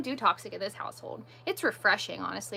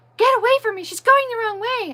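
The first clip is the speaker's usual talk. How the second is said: mock frantic outburst, very high and loud; 13 semitones higher, 12 dB louder than usual. Retelling a stranger's reaction in a store aisle: imitating someone freaking out. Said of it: "and starts freaking out".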